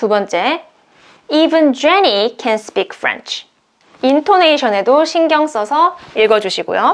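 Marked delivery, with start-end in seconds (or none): 1.3-3.5 heavy stress on Jenny, rest said lightly. Reading an English example sentence with even, putting stress on Jenny. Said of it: "even이 강조하는 곳에 강세를 두시면 돼요".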